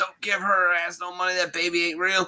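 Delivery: acted male yelling. Retelling how a man yelled outside the store: imitating a man yelling. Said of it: "This man yells out".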